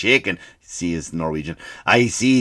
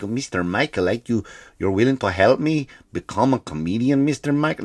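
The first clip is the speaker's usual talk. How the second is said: failed, bad put-on Norwegian accent. Speaker quoting the man he imagines coaching in comedy, bad Norwegian accent. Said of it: "I just can't do Norwegian accents".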